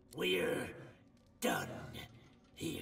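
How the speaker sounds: low, rough growl through gritted teeth. A narrator voices a dwarf who growls through gritted teeth after pocketing a knife. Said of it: "Through gritted teeth, the dwarf growls".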